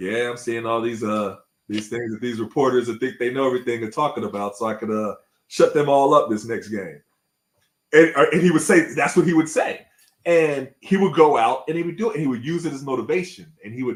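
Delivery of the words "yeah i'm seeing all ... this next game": ordinary talk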